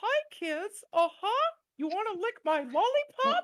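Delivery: very high, loud, squeaky cartoon voice. Acting out the brother's bit, in a Mickey Mouse voice. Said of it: "a perfect Mickey Mouse impersonation".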